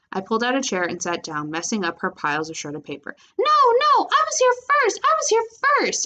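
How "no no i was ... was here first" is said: very high, piercing, screaming voice. Fighting over a chair at the table, screaming. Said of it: "Angelina screamed".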